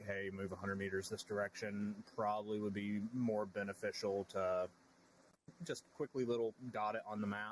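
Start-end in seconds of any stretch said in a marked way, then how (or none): none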